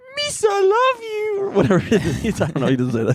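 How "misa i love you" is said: very high-pitched, goofy creature voice. Acting out a movie moment with Mom, as Jar Jar Binks: Jar Jar Binks voice. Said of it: "why am I doing a Jar Jar Binks impression".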